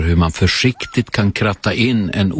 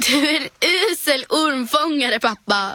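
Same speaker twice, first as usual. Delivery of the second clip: helpless laughter, choking while laughing; 4 dB quieter than usual. After her dad lets a snake escape, Julia speaks to him, choking with laughter. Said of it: "säger Julia och skrattar så hon kiknar".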